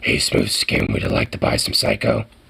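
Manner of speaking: rough-edged, gruff monster voice. Complaining that everyone has a gruff voice, mimicking a Fallout ghoul voice. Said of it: "like a ghoul from Fallout".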